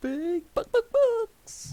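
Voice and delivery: high, loud cartoon voice with big pitch swoops. Speaker, talking about Aaron Rodgers, repeats the line as a Chicken Man impression. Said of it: "my impression of the Chicken Man from Toy Story two".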